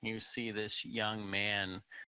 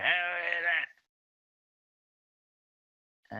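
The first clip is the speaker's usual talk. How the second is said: put-on high, raised old voice; 9 semitones higher, 5 dB louder than usual. Someone knocks on a door and a voice answers from inside: old voice. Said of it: "you hear a an old voice say".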